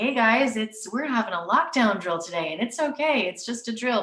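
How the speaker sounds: mock extra cheery, super friendly, reassuring tone. Speaker shows how they tell the kids about a lockdown drill, put-on super friendly voice. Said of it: "put on my super friendly voice".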